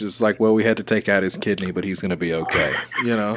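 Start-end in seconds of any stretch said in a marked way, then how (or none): 0.4-2.7 level, unchanging voice. Imitating a friend delivering news: mock flat surgeon voice. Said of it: "a surgeon voice".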